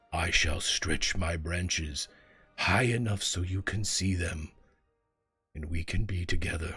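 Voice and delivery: tender, low, comforting, reassuring ancient tree voice. A great tree reassures a boy who is scared of school: booming, comforting, slow voice. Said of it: "You see the great tree lean down. / And you hear a booming voice, / comforting and slow. / I am old".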